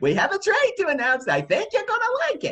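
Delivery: put-on high, swooping cross old-woman voice.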